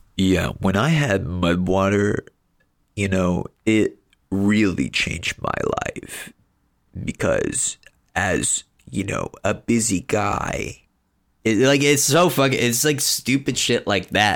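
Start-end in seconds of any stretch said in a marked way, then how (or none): 0.2-10.8 put-on deep, emotionless monotone, drawn out. Imitating a guy from mushroom coffee ads who talks like this: imitating a fake deep monotone voice. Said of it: "he talks like this".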